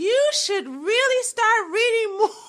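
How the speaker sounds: high, far-off put-on mocking voice.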